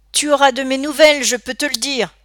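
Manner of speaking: high, loud, flung-out outcry. Narrator reading Scott as the gang quarrels, crying out. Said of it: "s'écria Scott".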